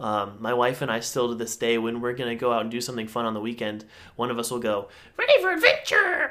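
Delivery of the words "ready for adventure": very high, loud, cute little voice. Quoting what a game character says when starting a level: cute little Toad voice. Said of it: "His cute little voice".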